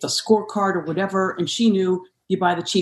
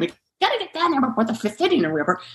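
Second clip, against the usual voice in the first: rushed, swooping, impatient put-on screaming kid voices; 6 semitones higher than usual. Parent retelling what her three young children screamed at the game, imitating kids screaming. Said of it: "three young children screaming".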